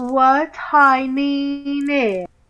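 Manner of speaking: put-on pretentious voice. Urged by another player to try an accent for her opinion: pretentious voice. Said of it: "try to sound more pretentious like him".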